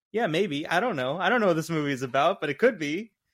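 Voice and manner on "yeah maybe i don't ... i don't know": plain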